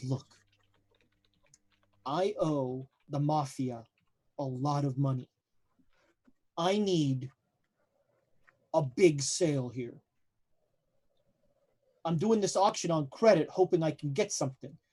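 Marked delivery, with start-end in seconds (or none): 0.0-9.9 speaking low, voice brought down. Retelling what a man at an auction told them, retelling a lowered voice. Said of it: "And then he lowers his voice".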